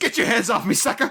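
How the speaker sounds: angry, high-pitched, flipping out. Retelling a film scene, the speaker quotes De Silva flipping out. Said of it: "He flipped out".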